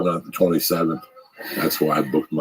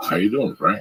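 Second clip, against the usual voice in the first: country twang; 5 semitones higher than usual. Retelling a film's phone call, imitating a hickish voice. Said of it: "went out of his way to sound kinda hickish".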